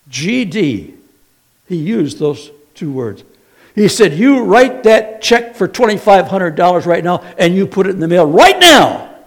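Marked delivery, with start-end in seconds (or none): 4.1-9.0 mock TV preacher voice, loud, high-pitched yelling. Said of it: "he yelled at us".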